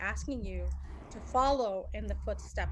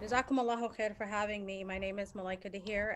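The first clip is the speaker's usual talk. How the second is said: plain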